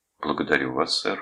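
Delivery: plain reading voice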